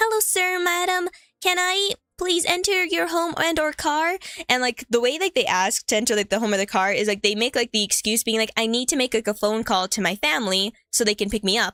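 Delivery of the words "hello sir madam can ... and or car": put-on overly polite little-kid voice, high and slow. Describing children oddly polite to strangers, speaker imitates an oddly polite child. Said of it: "they're oddly polite for children".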